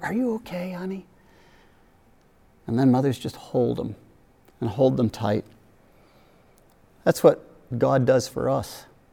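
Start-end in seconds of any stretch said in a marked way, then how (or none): 0.0-1.1 very soft, whispered, comforting tone. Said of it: "whisper in their ear".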